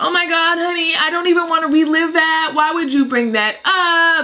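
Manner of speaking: mock teary, choked-up, high, upset pleading tone. Retelling an aunt who does not want to relive it: imitating someone upset and choking up. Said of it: "So she's all upset".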